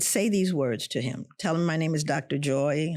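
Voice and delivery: ordinary delivery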